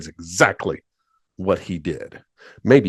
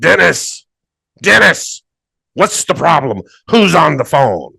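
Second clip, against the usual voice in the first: booming, furious shout, rough and high; 9 semitones higher, 7 dB louder than usual. Telling a story, speaker imitates an angry man shouting at dennis from a little window, retelling an angry booming shout. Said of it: "a booming voice shouted out".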